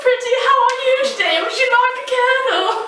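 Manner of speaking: very high, awful fake witch accent. Playing a character in a silly bit, speak in an awful put-on accent. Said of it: "I'm talking this awful accent".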